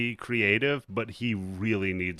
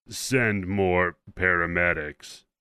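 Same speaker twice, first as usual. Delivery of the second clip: very deep, creepy voice; 3 dB louder than usual. Recapping a scene where he radios in to dispatch, in a creepy, very deep voice. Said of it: "in like the creepiest... very deep voice".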